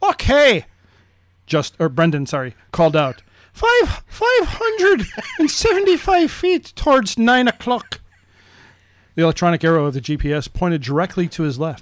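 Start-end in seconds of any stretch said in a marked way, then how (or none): 3.5-8.0 put-on high-pitched boy voice. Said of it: "I'll be Brendan".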